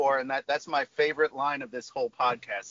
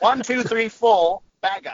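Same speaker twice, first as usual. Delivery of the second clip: put-on English accent, higher and louder; 6 semitones higher, 9 dB louder than usual. Sharing a favorite phrase to say with an accent, English accent. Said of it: "my favorite one to say with an English accent".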